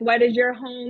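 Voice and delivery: ordinary talk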